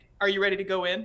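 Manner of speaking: fast, quick hushed whisper. Voicing a character in a game, speaking to Kepri: whispering. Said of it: "and I'm gonna whisper".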